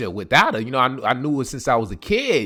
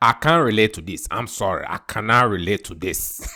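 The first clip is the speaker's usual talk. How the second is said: put-on West African accented English; 4 semitones lower than usual. Retelling how a West African father reacted to his crying son: imitating West African father. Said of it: "He was like".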